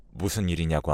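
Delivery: plain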